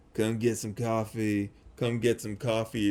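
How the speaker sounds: put-on low-energy mumble in a heavy New York accent. Telling about a man in a coffee cup costume outside, mumbling in a thick new york accent. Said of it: "mumbling in a thick New York accent".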